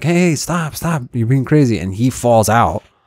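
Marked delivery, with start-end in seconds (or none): 0.0-1.8 put-on, pitched-up voice calling out. Retelling how his friends yelled at him on a convertible: imitating friends yelling. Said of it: "they're yelling at him".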